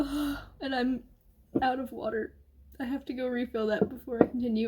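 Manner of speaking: crying, struggling to get the words out. Reader stopping mid-book to talk, crying, barely able to speak. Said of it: "I can barely even speak".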